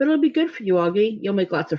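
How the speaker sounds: ordinary delivery, nothing marked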